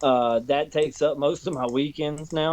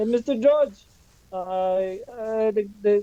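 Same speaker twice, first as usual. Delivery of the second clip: put-on thick Spanish accent, laid on slowly, high-pitched; 7 semitones higher than usual.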